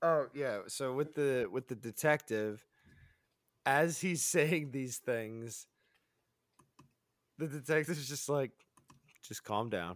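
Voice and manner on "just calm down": very flat, low, soft monotone. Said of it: "in the most monotone".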